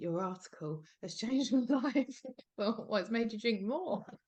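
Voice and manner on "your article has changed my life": acted-out tipsy, drunk woman's voice. Recalling a woman at a party praising the article, imitating a drunk woman. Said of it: "really pissed at a party once and went".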